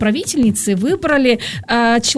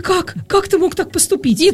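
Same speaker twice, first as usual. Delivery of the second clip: put-on hurt child voice, higher; 6 semitones higher than usual. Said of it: "выглядит как обиженное дитя".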